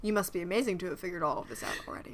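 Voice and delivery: put-on dry sarcastic voice. Imitating Hans talking with Ellis: Alan Rickman sarcasm mode. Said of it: "Alan Rickman's sarcasm mode".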